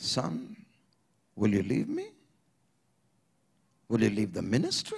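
breaking, cracked, choked-up, low voice. The speaker recounts the Lord speaking to him: retelling a cracked, choked voice. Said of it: "in that cracked, choked tone".

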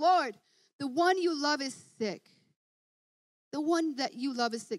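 ordinary delivery

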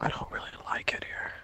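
quiet whispering. Sneaking through a game area with another player, whispering. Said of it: "It sounds very nice when you're whispering".

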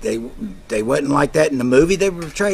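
ordinary talk, nothing marked

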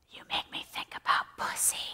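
very quiet, hushed whisper. Retelling what a drunk woman whispered in the speaker's ear: imitating a whisper. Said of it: "she whispers in my ear".

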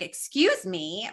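entitled, haughty, demanding tone. Showing how not to say excuse me, in a Karen-ish tone. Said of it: "don't say it like very Karen-ish".

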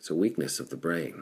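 ordinary talk

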